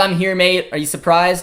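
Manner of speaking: ordinary talk, nothing marked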